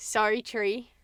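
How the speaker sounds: put-on Australian accent. Speaker repeats a phrase they kept saying, now in an Australian accent. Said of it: "started doing that with Australian accent".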